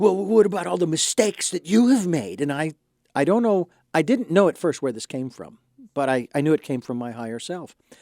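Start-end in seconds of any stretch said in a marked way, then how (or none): 0.0-2.4 frustrated, irritated, angry tone. Retelling a challenge someone threw at the speaker, in a retold frustrated, angry voice. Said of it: "in a rather frustrated and angry voice".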